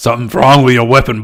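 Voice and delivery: put-on deep voice. Narrating a game scene, the storyteller voices a character in a deep voice. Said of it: "I put on the deep voice".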